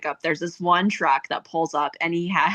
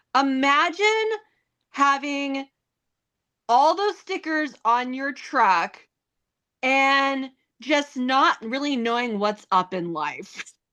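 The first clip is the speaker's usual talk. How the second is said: put-on loud, pitched-up, pointed delivery; 7 semitones higher than usual. Retelling what she said beside his truck at school pickup, retelling a loud remark. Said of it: "she just said very loudly".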